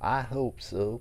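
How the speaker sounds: possible Oklahoma accent. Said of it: "Maybe Oklahoma?".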